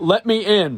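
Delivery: put-on belligerent, pushy, sloshed drunken voice. Reenacting doorbell footage of a belligerent drunk asking: imitating a drunk man. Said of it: "let me try and reenact it really quickly".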